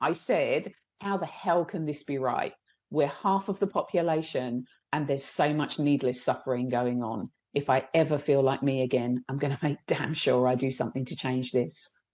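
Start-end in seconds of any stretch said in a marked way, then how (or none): none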